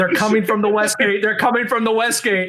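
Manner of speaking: put-on, high-pitched shouted voice. Retelling a callout heard in comms during a siege: imitating Bartik yelling. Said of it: "hearing Bartik on the attacking team yelling out".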